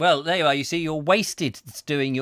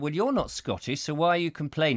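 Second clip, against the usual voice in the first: plain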